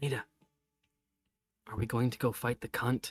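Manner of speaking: sweetest whispering voice. A character asks another a question, whispering in the sweetest voice he can. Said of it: "in the sweetest voice he can, he whispers".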